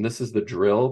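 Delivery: ordinary delivery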